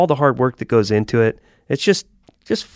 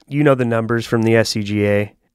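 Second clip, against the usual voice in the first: normal talking voice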